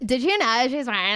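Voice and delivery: heavy slang, barely understandable, hard-to-follow chatter. Imitating a cousin who talks in confusing slang: imitating a cousin's slang talk. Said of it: "She talks in, like, slang".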